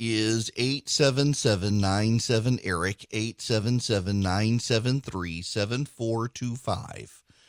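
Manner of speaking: very slow, soft, carefully spaced out words. Hosting a call-in show, giving listeners the phone number: very slow. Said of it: "Notice how I said that slowly".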